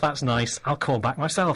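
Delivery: ordinary talk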